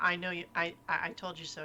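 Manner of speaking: ordinary talk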